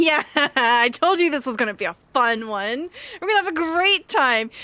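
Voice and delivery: thrilled, loud, high-pitched gushing excitement.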